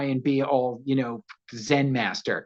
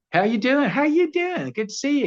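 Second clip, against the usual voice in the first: bright, put-on Texan accent; 11 semitones higher than usual. Imitating a co-star from Houston, Texas: imitating a Houston Texan accent. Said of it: "She talks like this".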